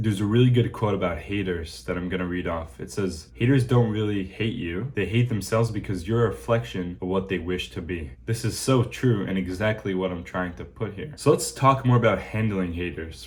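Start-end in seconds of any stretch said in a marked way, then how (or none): none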